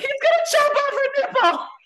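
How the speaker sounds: very high-pitched, alarmed, panicked blurt. Retelling own reaction to hearing about the forceps: imitating own panicked thought. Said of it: "my brain panicked and was like".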